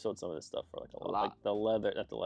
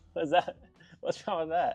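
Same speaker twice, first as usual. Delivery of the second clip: ordinary talk, nothing marked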